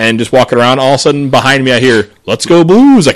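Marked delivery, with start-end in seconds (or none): 2.3-3.1 hollered, really loud, high-pitched cheer. Retelling a cheer heard from behind in a crowd: imitating a loud shout. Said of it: "really loud".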